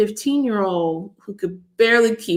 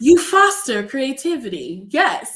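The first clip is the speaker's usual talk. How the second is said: put-on, fake British accent; 5 semitones higher than usual. During introductions with a guest, the speaker slips into a put-on British accent. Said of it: "Was that your British accent?".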